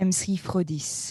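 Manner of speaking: put-on French accent. Urged by another speaker to say the alias, put-on french accent. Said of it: "you should do M C Frodis in the French accent".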